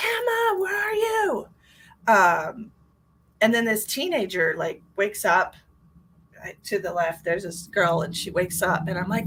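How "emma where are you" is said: desperate, frantic yell at very high pitch. Retelling searching for a missing child and calling her name; retelling frantic yelling. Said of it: "I'm yelling for her frantically".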